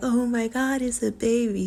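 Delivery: put-on high, drawn-out baby talk voice. Showing how people usually speak to babies: raised high pitch. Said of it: "You would go higher".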